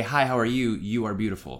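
plain

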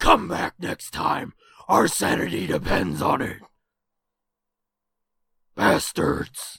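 terrible rough, creaky, raspy voice. Signing off the episode in a terrible Batman voice. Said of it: "that is a terrible voice".

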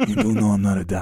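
whispered, close, caped-superhero voice.

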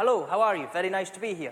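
natural Scottish accent. Scottish speaker showing the audience how a scottish person sounds, in a scottish accent. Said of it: "This is a Scottish person talking to you".

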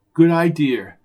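plain

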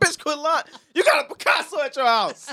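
very high heated outburst. Retelling a movie character's line to a woman: imitating a raised angry voice. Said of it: "He raised his voice".

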